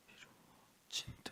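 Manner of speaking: soft, slow whispered repetition.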